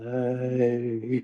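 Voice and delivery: put-on deep adult-man voice. Retelling how a baby nephew says hey: imitating nephew's grown-man "hey". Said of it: "it sounds like a little baby. But when he says".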